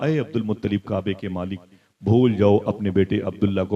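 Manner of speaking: ordinary talk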